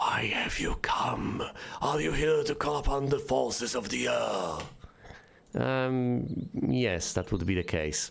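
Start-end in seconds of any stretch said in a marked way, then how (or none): 0.0-4.6 forceful stage whisper, said loudly. A barely visible air creature questions those who have come: loud whisper. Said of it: "in what can only be described as a loud whisper".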